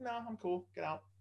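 put-on, very high, breezy, nonchalant delivery. Retelling a friend turning down a woman at the gym: imitating a nonchalant brush-off. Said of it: "just completely nonchalantly".

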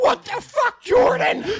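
very high, cracking, crackly outburst. Retelling being caught on a bus, the speaker imitates Gage's crackly voice. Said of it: "Gage is like crackly voice".

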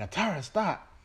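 high, loud called-out delivery.

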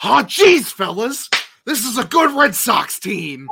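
very loud, very high, hammed-up, gushing cheer. Teased for sounding unenthusiastic about the team, hamming it up, over-the-top enthusiastic. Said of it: "You want me to fucking zane it up?".

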